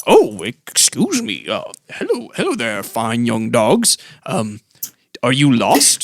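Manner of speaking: put-on elderly gentleman character voice. A game master voices a robed elderly gentleman in the scene, elderly gentleman voice. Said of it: "an elderly gentleman wearing robes".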